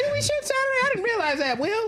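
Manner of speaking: very high, squeaky, overreacting squeal. Retelling someone feigning surprise about a Saturday shoot: Kevin Hart overreaction voice. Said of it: "that high pitched voice that you know they're lying".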